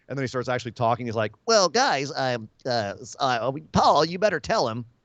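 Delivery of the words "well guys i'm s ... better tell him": high, reedy, slow, halting voice that stalls and falters. Imitating a wrestler when he starts actually talking: Brock Lesnar high reedy voice. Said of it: "he's got that kind of high, reedy voice".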